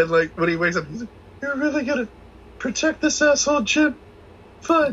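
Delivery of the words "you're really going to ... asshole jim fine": out-of-breath, very high-pitched whining voice. Retelling the sergeant's line to Jim, imitating him out of breath and high-pitched. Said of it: "The out of breath, high pitched".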